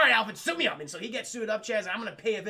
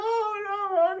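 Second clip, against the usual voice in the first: mock crying, higher pitch; 13 semitones higher, 3 dB louder than usual. Retelling a scene where a character sees Harvey: imitating someone crying. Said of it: "She starts crying".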